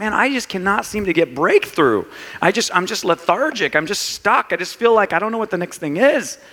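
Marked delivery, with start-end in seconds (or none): none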